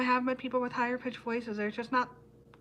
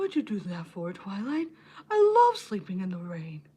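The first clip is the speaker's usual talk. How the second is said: low, swooping, cartoonish dragon voice; 4 semitones lower than usual. Recalling a memorized line from an episode, doing a Spike impression. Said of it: "I could do a good Spike Spike impression".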